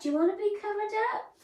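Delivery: high, silly pet-talk voice. Talking to her little dog, in a silly pet-talk voice. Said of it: "they talk to them with silly voices".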